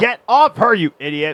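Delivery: put-on half-shouted scolding. Speaker retells yelling at Kingpin while watching on a laptop: retelling a yell. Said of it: "I was like yelling".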